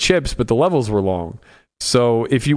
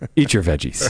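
put-on wise elder voice; 3 semitones lower than usual. Imitating a listener calming everybody shouting: imitating D-Nex as wise elder. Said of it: "like the wise elder or whatever. ... he just goes".

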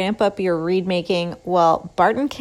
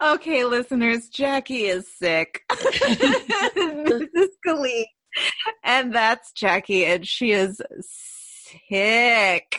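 slow speech, laughing through the words; 4 semitones higher than usual. A podcast host tells listeners her co-host is sick, laughing while speaking. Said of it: "I'm so sorry I'm laughing at you. I can't help it".

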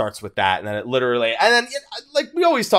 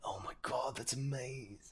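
put-on muttering under breath, much quieter, slower; 21 dB quieter than usual. Recalling a man as things about Higashi were unveiled, imitating muttering under his breath. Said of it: "speaking to himself under his breath".

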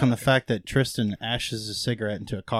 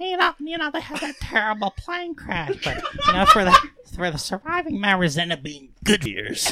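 character voice, very high, swooping up and down. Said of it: "ask Jiminy Glick what he thinks about [name]".

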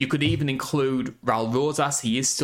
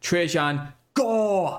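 put-on announcer voice, pitch raised; 5 semitones higher than usual. Announcing a fighter's name with a Paul Heyman impression. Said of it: "my Paul Heyman impression".

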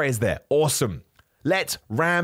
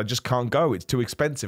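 ordinary delivery

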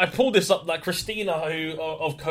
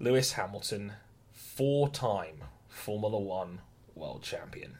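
low, begrudging mutter through clenched teeth; 6 semitones lower, 8 dB quieter than usual. Forced to read out the next bullet point to viewers, through gritted teeth. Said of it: "through gritted teeth, begrudgingly say".

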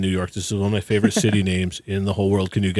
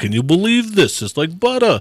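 put-on Brooklyn accent, pitched very high; 9 semitones higher, 3 dB louder than usual. Imitating his sister's ex-husband from brooklyn, brooklyn accent. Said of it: "he was from Brooklyn. You know, he talked like this".

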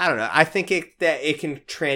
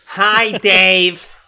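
put-on rude voice, higher and louder; 5 semitones higher, 11 dB louder than usual. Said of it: "if that voice answered the phone".

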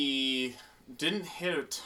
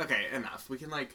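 usual speaking voice

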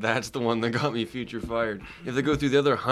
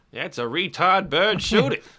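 put-on old-timey 1940s voice, much higher pitch; 8 semitones higher, 5 dB louder than usual. Joking with others, doing a character, old-timey 1940s character voice. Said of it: "I said it in an accent, in a voice. I was doing a character".

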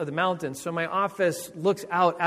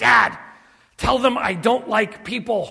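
put-on child's loud stage whisper that carries; 5 semitones higher, 6 dB louder than usual. Father retells his son tugging his pant leg, imitating a loud would-be whisper. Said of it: "in this loud voice, they thought was a whisper".

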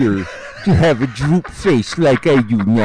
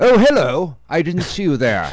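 put-on British broadcaster voice, pitched higher; 4 semitones higher than usual. Recalling the narrator of school Masterpiece Theatre videos: Alistair Cooke impression. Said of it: "And he'd be like".

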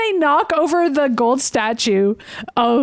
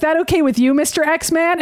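ordinary talk, nothing marked

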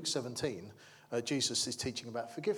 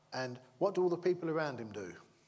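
ordinary talk, nothing marked

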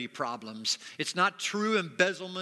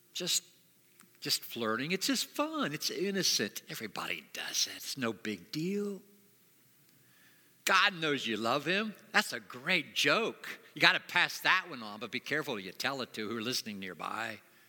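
tempting serpent-like whisper, lower pitch; 4 semitones lower than usual. Acting out the serpent tempting a believer: Satan whispering. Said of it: "he starts whispering".

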